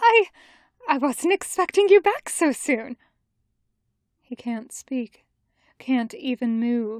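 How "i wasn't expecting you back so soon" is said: quavering, unsteady, trembling, high voice. Narrator reading a woman greeting Jotaro back sooner than expected, high trembling voice. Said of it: "in a high, trembling voice".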